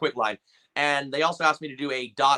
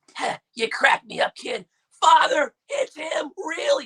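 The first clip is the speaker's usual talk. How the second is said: gruff, raised voice, very high and loud; 14 semitones higher, 5 dB louder than usual. Recalling how a cartoon villain first sounded: gruff old Frieza voice. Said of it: "he kinda sounded this like".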